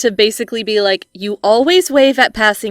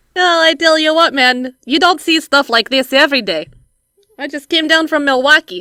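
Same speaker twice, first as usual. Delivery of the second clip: put-on Minnesotan accent, higher pitch; 5 semitones higher than usual. Playing an innocent bystander from Minnesota who has no idea what's going on, Minnesotan accent. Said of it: "just a Minnesotan who has no idea".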